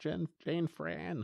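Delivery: put-on high, rough, rasping, creepy little-kid voice. Recapping an episode, imitating the child Emma saying Jane's name: Emma impression. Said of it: "Was that your Emma impression?".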